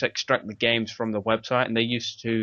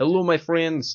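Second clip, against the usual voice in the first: showy put-on Russian accent, pitched up; 6 semitones higher, 3 dB louder than usual. Showing off the Russian accent they think they can do: Russian accent. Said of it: "I think I can do a pretty kind of Russian accent".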